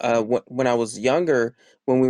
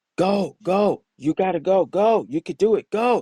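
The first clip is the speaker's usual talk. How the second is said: mock unkind, pushy, harsh, drawn-out, pitched-up urging; 7 semitones higher than usual. Retelling a dad urging running up hills again: imitating harsh urging. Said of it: "he wasn't very nice about it".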